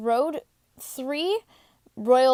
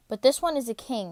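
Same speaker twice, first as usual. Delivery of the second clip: ordinary delivery, nothing marked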